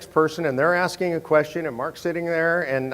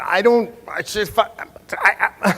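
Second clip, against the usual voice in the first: mock flustered stammering, much higher pitch; 4 semitones higher, 4 dB louder than usual. Retelling trying to answer while an angry man keeps accusing, retelling flustered stammering. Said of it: "I'm trying to enter".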